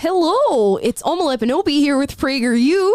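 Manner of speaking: clumsy, bad put-on Midwestern accent. Introducing themselves with prageru, in an attempted midwestern accent. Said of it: "Will wanted me to do a sort of Midwestern accent".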